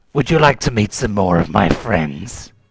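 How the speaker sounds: menacing, taunting, sinister evil-overlord voice. Voicing an unseen figure at the chamber's northern end: evil villain voice. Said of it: "you hear some evil laughter echoing around".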